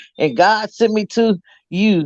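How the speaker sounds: slow, preaching preacher cadence. Retelling a son mocking his dad doing the God thing: imitating Dion preaching. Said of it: "just like his dad".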